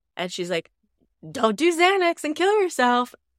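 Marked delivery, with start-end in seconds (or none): 1.3-3.1 beaming, very happy cheer, very high-pitched. Retelling what a mother said to her daughter in a video: imitating a very happy voice. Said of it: "saying it all in a very happy voice".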